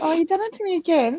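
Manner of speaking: very high voice, on the verge of crying. Reacting to what the other speaker just said, about to cry. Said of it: "I am gonna cry".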